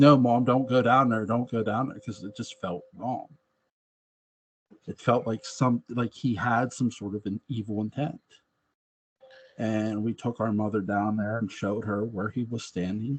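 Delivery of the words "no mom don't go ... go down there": tearful, pleading, crying voice. Retelling a plea to a mother not to go down there: imitating crying kids pleading. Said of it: "we're crying".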